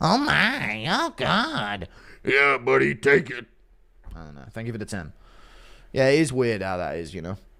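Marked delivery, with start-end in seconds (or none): 0.0-3.5 very slow, lingering, drawn-out woman's voice. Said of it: "impression of Kayla pounding Netanyahu".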